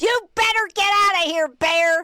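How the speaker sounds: yell pitched way up high. Retelling a bear running at them, yelling at it: retelling yelling at a bear. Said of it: "So I just started yelling at it".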